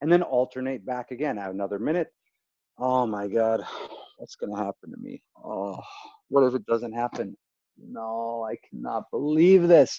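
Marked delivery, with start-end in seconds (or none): 2.8-10.0 exaggerated worry, fully sunk in. Demonstrating an exercise of alternating worry and excitement, exaggerated worry. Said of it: "and just deep into that".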